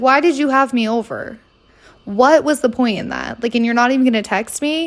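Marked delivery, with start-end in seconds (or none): none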